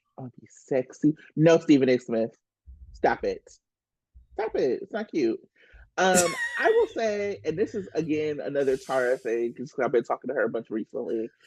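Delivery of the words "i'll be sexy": mock sultry bedroom voice, much lower, slower. Speaker mocks a man for being a creep with her, mock bedroom voice. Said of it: "I'm gonna put on my bedroom voice".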